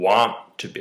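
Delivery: slow, emphatic stress on want to be.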